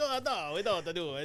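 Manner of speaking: loud put-on old Italian man voice. Retelling a tv interview where comedians question him: imitating an old italian man. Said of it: "he's all, like, old Italian guy".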